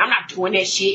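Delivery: mimicked put-on voice, said with attitude. Retelling a curt refusal of a babysitting suggestion: imitating Reggie's attitude. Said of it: "he said it with an attitude".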